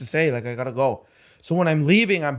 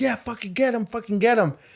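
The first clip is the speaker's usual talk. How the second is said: mock high-pitched hollering; 7 semitones higher than usual. Retelling a fight on the street, a lady urging it on: imitating a woman yelling. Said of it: "lady is yelling".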